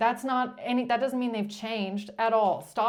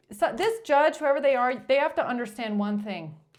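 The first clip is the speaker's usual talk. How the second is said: ordinary talk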